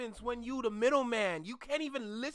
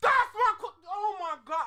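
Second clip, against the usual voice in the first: loud, high-pitched shouted outburst, cut off; 7 semitones higher, 7 dB louder than usual. Reacting to another speaker's question in a discussion, yelling. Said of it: "I'm sorry for yelling".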